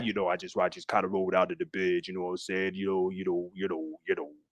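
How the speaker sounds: very low, very soft, quiet, groggy just-woken voice. Speaker mimics how some people sound waking up in the morning: just-woke-up voice. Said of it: "Why are you trying to sound like that?".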